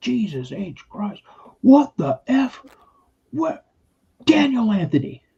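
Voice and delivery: very high, drawn-out, exasperated angry dad voice. Retelling how an angry father came home, imitating angry dad. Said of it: "my dad was pissed".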